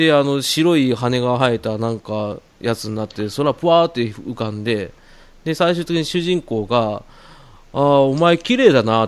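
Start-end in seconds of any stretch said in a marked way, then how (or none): 7.4-9.1 emotionless, wooden, stilted line reading. Retelling how the hero said a line in the film: imitating a flat line reading. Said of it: "って棒読みで言ったんですよ".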